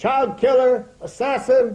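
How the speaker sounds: angry shouting. Recounting how people jumped up at the speaker, retelling people calling names. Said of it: "started calling me names".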